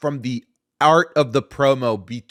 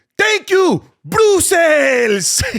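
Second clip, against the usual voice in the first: put-on Latin American accent, very high and loud; 6 dB louder than usual.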